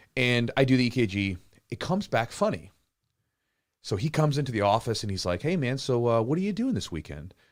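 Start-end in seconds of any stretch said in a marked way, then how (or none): 5.5-7.4 mock-grave, somber tone with swooping pitch. Retelling a doctor visit after an odd EKG result, imitating the doctor's somber tone. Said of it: "very like a sort of a somber tone".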